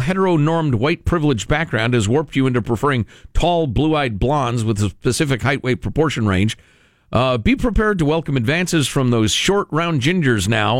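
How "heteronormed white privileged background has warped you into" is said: usual speaking voice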